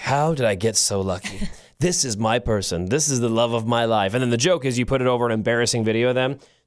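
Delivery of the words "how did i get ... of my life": low, deep, sultry, sensual delivery. Describing a social media audio trend, imitating its deep, sensual voice. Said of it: "this really deep, sensual voice".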